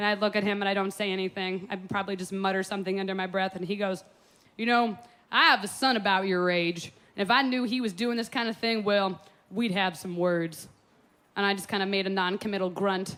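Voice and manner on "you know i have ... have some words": plain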